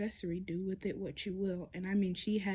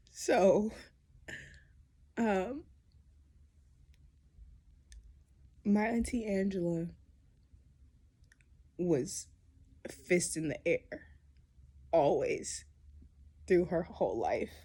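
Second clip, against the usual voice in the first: speaking tearfully, through tears; 5 dB louder than usual. Speaking on video about auntie Angela, talking through tears. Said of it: "we're gonna talk through the tears".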